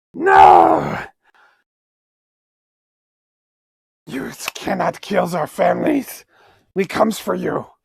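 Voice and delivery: unhinged spider creature voice, rasping, creaky and swooping. Voicing spiders defending their families from the rangers, crazy spider voice. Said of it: "I'm going a little too crazy with the spider voices".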